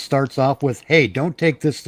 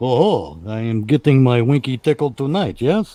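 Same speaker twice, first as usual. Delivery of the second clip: slow, fake, cartoonish put-on Russian accent; 2 semitones lower than usual. Imagining their reply to someone who agrees, in a bad cartoon Russian accent. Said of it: "I'm throwing on a bullshit cartoon Russian accent".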